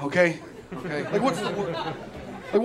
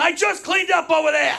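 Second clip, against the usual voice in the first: acted, raised, pitched-up scolding yell; 8 semitones higher, 5 dB louder than usual. Retelling being scolded as a little kid: imitating mom yelling. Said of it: "my mom yelling at me".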